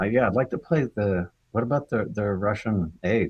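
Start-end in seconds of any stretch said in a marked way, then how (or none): none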